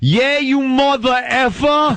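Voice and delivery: put-on Long Island accent. Retelling own past outburst at a listener: imitating own strong Long Island accent. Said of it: "I sounded like I came right out of, like, Suffolk County".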